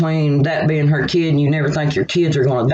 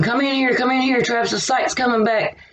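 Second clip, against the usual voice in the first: put-on, very high, overjoyed excited screaming; 9 semitones higher than usual. Retelling how mom called the nurse in: imitating mom screaming excitedly. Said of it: "she's screaming".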